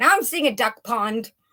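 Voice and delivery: loud yell. Speaking while the guys nearby are loud, yelling. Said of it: "Sorry, I'm yelling".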